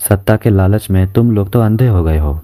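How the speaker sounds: ordinary delivery, nothing marked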